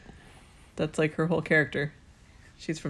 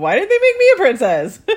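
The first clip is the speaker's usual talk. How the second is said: loud, high outraged cry. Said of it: "It's like".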